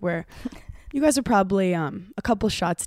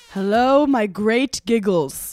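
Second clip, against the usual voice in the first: put-on old British statesman voice, louder; 2 semitones higher, 4 dB louder than usual. Greeting the listeners in a put-on voice: sounds like Winston Churchill. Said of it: "It sounded like Winston Churchill".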